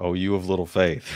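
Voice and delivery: ordinary talk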